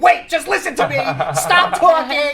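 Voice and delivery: put-on cross scolding, high and swooping. Retelling a caller's imitation of him: imitating someone being angry. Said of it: "did a very good imitation of me".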